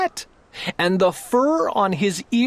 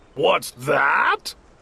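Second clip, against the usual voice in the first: terribly gruff, low bear-like growl; 4 semitones lower than usual. Narrating a story, a voice answers the rabbit's boast: terribly gruff growl. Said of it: "Growled a voice that was terribly gruff".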